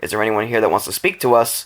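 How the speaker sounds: normal talking voice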